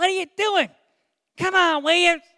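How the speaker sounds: put-on high-pitched Pennsylvania northern accent. Speaker imitates a man from Pennsylvania who got on them on the field, high-pitched northern accent. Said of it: "so he had that northern accent. High pitch".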